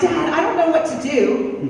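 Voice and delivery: ordinary talk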